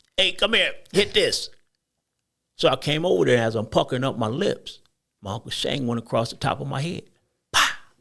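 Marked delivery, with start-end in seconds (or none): 0.2-1.5 pitched-up, calling-out voice. Retelling what an uncle said in the basement, imitating his uncle talking. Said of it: "I'm gonna talk like him".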